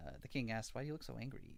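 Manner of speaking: ordinary talk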